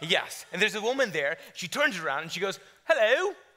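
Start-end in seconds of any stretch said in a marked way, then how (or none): 2.8-3.3 put-on high, loud, chirpy British accent. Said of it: "She's British".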